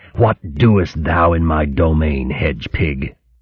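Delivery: grating, harsh, rasping bird voice. A goshawk stares down at Trimp and speaks to her: rasping, harsh bird voice. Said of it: "The goshawk's voice was rasping, harsh".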